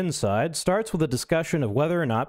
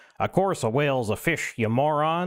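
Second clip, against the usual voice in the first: put-on thick, heavy southern drawl. Retelling an argument about whales with a bearded redneck, in his heavy southern accent. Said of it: "he says in his heavy southern accent".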